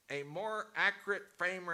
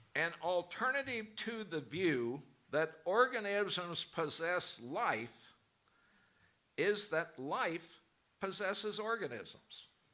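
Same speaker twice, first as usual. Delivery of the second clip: careful, deliberate reading aloud. Reading a quoted passage aloud to listeners: reading slowly. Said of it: "I'll read it slowly".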